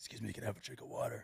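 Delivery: low, quiet, creaky, hoarse rasping pony voice.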